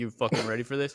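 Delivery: angry, pissed-off wrestler voice. Retelling a wrestling match, imitating Billy Gunn. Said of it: "He's like".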